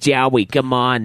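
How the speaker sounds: over-the-top, exaggerated New York accent. Showing how the name sounds: exaggerated New York accent. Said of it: "really fucked up, like, New York accent".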